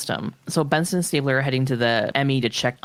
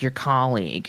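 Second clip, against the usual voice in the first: acted ironic, pointed, sarcastic delivery. Acting out how he said your colleague, mock-sarcastic tone. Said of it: "he was being sarcastic by colleague".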